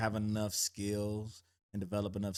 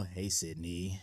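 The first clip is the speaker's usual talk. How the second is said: sinister, creepy voice; 2 semitones lower than usual. Acting out a stranger's phone call: imitating a creepy voice. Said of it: "calls you with a creepy voice".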